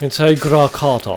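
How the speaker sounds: put-on British accent. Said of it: "Say it like the British".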